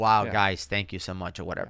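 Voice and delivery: choked-up voice catching with emotion. Retelling how Brian reacted to praise: imitating Brian getting choked up. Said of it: "getting choked up".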